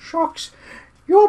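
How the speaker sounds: very high, bad, atrocious put-on voice. Reading a quote aloud, the speaker tries a voice for it, a bad attempted character voice. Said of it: "I'm going to attempt a voice for this".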